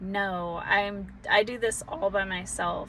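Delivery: ordinary delivery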